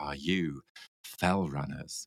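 hushed, slow, reverent awe. Retelling walkers on a mountain path asking a question: imitating hushed reverent voice. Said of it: "revered eyes and hushed voices and said".

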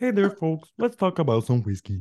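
high, swooping, sing-song cartoon puppet voice. Describing switching their intro to Bert and Ernie: Bert and Ernie voice. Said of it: "changed it all to being Bert and Ernie from Sesame Street".

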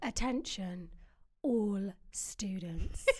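synthetic, machine-like robotic AI voice. Asked to sound very AI, trying the line in a very AI-sounding voice. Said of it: "Can you sound very AI?".

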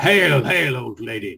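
loud announcing, calling-out voice. Player's character announcing themselves to an old lady, loud announcement. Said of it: "I announce myself loud".

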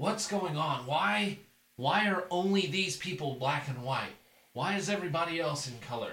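high, showboating, grandstanding half-yell. Retelling what a man says while grandstanding, retelling a grandstanding yell. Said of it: "he's just kind of yelling this out".

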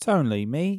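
bit of put-on Cockney. A podcast host introduces the show in a cockney accent. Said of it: "what's this accent?".

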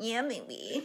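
put-on baby voice, Liverpool accent. Retelling how they talk to her, in a half baby voice with a liverpool accent. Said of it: "lite så halvt bebisröst med en typ Liverpool-accent".

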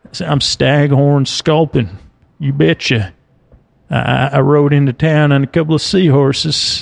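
cowboy character voice. Imagining a fish as a western character: western character voice. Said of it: "I guess if I was a Western character".

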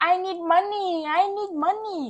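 high, drawn-out scream, repeated over and over. Retelling what a woman kept screaming in the club, imitating someone screaming. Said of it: "Lisa keeps screaming".

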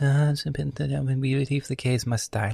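put-on calm preacher tone. Imagining how a hateful sermon would sound if delivered with calm energy, in a calm preacher voice. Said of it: "we're in priest mode".

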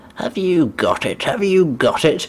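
skulking, creepy voice with giggling laughter. Summarizing a scene, quoting a man who skulks around Lanyon: imitating creepy laughing talk. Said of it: "kind of laughing and saying creepy shit".

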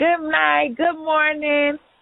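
very high, loud hollered shout. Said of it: "I am that person that would shout".

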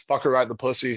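ordinary delivery

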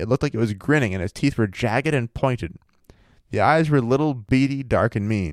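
ordinary talk

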